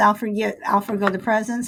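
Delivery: ordinary delivery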